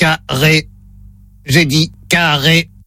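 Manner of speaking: low, monotone, mechanical robot voice. On a phone call, playing the robot that says the test word, in a robot voice. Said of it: "Voix de robot enclenchée".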